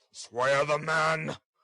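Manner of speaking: grudging, ill-graced, gruff growl. Narrator voicing Mister Fang answering the man, growled. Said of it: "growled Mister Fang with a very ill grace".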